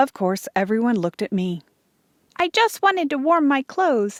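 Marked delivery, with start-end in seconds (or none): 2.4-4.2 small, little, high voice. Everyone looks at the narrator, who answers Pa in a small voice. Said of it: "I said in a small voice".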